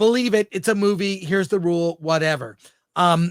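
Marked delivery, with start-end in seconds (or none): none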